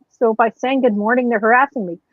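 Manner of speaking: plain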